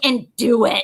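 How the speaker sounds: loud, growling voice through clenched teeth. Retelling how a woman growled at her, the speaker is imitating a growl. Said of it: "she like growled at me".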